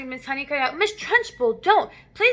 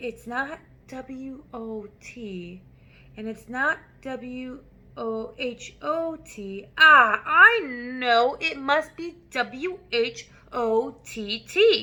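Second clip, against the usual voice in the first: very slow, hesitant spelling, drawn out letter by letter. A narrator reads a boy spelling a word for the Trunchbull: very slow. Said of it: "he said very slowly".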